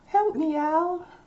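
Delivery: very high, helpless damsel-in-distress cry. Imitating someone pleading with Al for help, in a damsel in distress voice. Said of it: "That's my damsel in distress voice".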